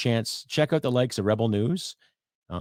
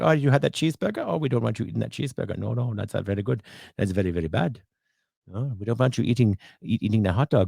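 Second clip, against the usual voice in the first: terrible, bad fake German accent; 8 semitones higher than usual. Acting out a voice that scolds someone about what they eat, in a bad German accent. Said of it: "I know it's a terrible uh, German accent".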